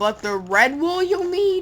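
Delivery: voice breaking very high on red wool. Speaker addressing viewers mid-explanation, with a voice crack. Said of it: "which is a voice crack".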